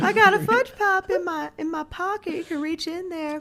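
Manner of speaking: very high, put-on creepy old man voice. After being told he sounds like him, doing the creepy old guy from Family Guy. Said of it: "you sound like the creepy old guy".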